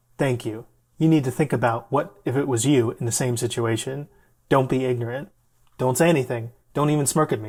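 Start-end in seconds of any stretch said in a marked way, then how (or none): none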